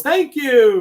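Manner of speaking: very high, shrill, loud yell. Retelling the call that ended the meeting: imitating a yell. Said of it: "he yells".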